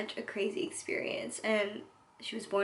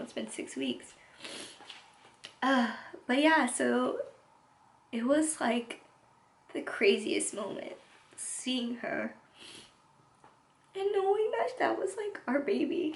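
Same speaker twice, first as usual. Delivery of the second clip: choked up, emotional, higher pitch; 3 semitones higher than usual. Recalling first seeing the baby after the drapes came down: getting emotional. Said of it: "I didn't think I was gonna get emotional".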